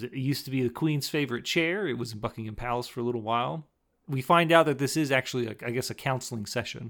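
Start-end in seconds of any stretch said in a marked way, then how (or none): none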